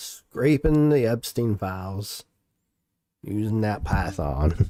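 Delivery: country accent coming through. Reading out the video title, the speaker slips into a country accent. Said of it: "My country accent coming out on this one".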